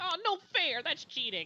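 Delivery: squeaky, very high, nasal little goblin voice. Narrator in a tabletop game voicing a goblin, nasally goblin voice. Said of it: "you hear the little nasally goblin voice".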